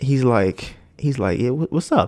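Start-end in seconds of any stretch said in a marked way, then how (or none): 1.4-2.1 mock, very nervous, high, stumbling stammer. Retelling how he answered when asked a question: imitating someone nervous. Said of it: "real nervous, too".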